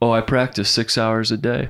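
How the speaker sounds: put-on dry, deadpan delivery. Retelling a friend's answer about guitar practice: imitating Lee Martin, matter-of-fact and dry. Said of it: "so matter-of-factly, you know, just quite dry".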